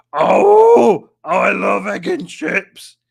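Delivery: very loud, very slow, creaky, swooping rasp. Reading out a chat message in a put-on voice: Alex voice. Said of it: "That's exactly what Alex sounds like".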